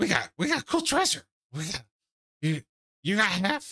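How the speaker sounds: youthful, high, bouncy little goblin voice. Voicing two younger goblins whose talk Higgs overhears: young goblin voice. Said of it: "these two younger goblin voices".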